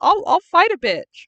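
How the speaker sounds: put-on cocky tough voice, high and loud.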